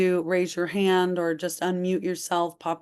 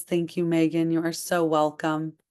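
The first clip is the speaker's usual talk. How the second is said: usual speaking voice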